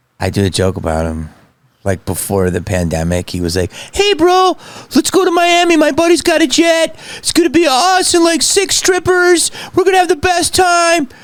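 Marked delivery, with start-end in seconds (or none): 3.7-11.1 very high, poorly done, off-target put-on voice. Telling a joke about Jay Davis, doing a high-voiced Jay Davis impression. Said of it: "Why is Jay talking with such a high voice?".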